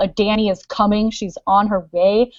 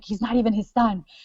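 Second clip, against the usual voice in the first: mock muttering to oneself, quieter; 5 dB quieter than usual. Acting out reading the books and muttering to yourself: imitating muttering. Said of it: "you're muttering to yourself".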